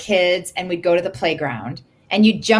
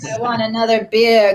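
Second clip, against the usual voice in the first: put-on drunk woman voice, higher; 4 semitones higher than usual. Showing a background game character, the drunk woman: imitating a drunk woman. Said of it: "the drunk woman that's like".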